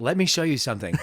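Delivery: very calm, low and soft delivery.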